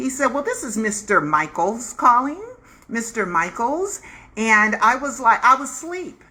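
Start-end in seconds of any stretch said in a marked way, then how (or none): 0.3-4.0 put-on swooping, sing-song disguised voice. Retelling an early morning phone call: disguise voice from Ghost. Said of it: "he was using the voice from, uh, Ghost".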